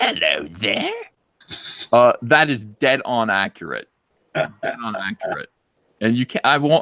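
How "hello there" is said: low, deep put-on British accent. Show someone how you say they sound, in a put-on british accent. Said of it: "when I say that you sound like this".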